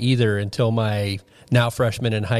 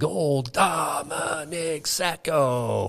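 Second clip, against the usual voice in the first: toned-down, put-on announcer scream, mild yell; 4 semitones higher, 5 dB quieter than usual. Retelling how someone screamed after a goal: imitating a full-volume scream. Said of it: "screamed at the top of his lungs".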